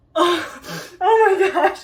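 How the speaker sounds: trembling with excitement. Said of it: "I'm, like, literally shaking".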